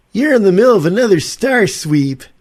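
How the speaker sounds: very high, loud radio announcer voiceover delivery. Recalling a familiar voiceover artist from commercials: imitating a radio voiceover announcer. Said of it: "forgive me my impersonation".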